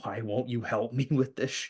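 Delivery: put-on screaming, suddenly breaking off. Retelling screaming at him in frustration: imitating own past screaming. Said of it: "I've screamed at this guy going".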